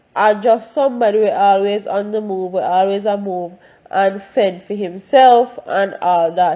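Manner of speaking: plain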